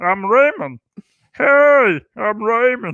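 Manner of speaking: slow, drawn-out, slightly froggy drawl. Joking about July Fourth burgers: Ray Romano impression, Kermit-like. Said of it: "a hybrid between Ray Romano and Kermit the Frog".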